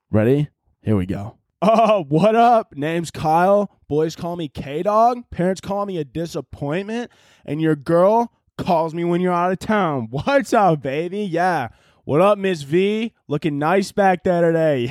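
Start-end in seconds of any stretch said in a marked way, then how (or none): 1.6-14.8 put-on loose, party-boy frat bro voice. Speaker performs an imagined frat kid working as a D.A.R.E. officer: frat kid D.A.R.E. officer voice. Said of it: "this is what I imagine a frat kid as a D.A.R.E. officer would be like".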